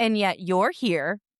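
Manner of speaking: acted cheeky, pointed, sassy tone with attitude. Retelling a woman's comeback to an unexpected visitor, retelling a sassy retort. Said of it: "Yesenia very sassily says".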